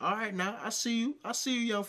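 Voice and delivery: put-on high old-man voice. Recalling how an older man greets him as he drives by: imitating an old head. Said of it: "an old head would be like".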